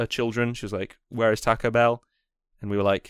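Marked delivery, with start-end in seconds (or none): none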